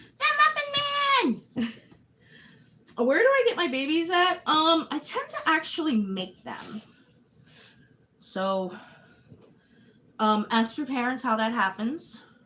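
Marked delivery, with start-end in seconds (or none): 0.2-4.3 very high, squeaky little voice. Measuring flour while baking, breaking into a squeaky voice. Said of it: "squeaky voice".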